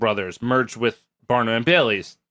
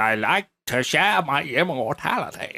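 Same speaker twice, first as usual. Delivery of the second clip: put-on slow, old-fashioned transatlantic drawl; 3 semitones higher than usual. Imitating the phonograph recording as P T Barnum's transatlantic accent. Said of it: "kinda like transatlantic meets, like, old racist".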